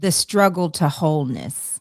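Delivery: plain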